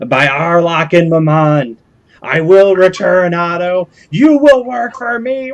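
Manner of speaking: loud, shrill, screeching monster voice. A game master voices a creature just before it vanishes, screeching creature voice. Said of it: "it just screeches loudly once and says".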